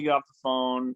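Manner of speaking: normal talking voice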